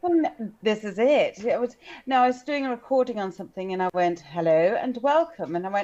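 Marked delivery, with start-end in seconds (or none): 4.2-5.6 prim and proper nineteen-fifties voice. Speaker recalls starting a recording, in a prim and proper 1950s voice. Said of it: "I sound very prim and proper".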